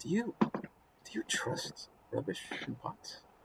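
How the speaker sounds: hushed, very quiet, close whisper. Voicing a character who leans in close to ask: whispering in character. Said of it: "close enough to, to whisper".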